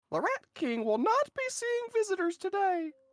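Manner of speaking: squeaky, shrill little yell, very high. Storyteller voicing an unseen figure fleeing to the west: squeaky yelling voice. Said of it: "followed by a squeaky voice that yells".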